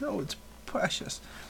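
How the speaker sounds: high, whispered coo on "precious". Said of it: "the word you said was precious".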